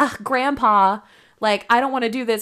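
normal talking voice

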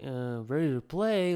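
put-on confused, puzzled, lost-sounding kid voice. Retelling his answer when the coach asked if he was ready, imitating a confused kid. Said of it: "confused kid".

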